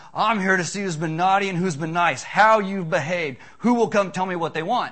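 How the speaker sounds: rough, powerful, loud, gravelly, strong voice. Retelling a man standing before young kids, gravelly, strong voice. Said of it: "His voice is gravelly and strong".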